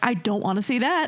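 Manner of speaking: plain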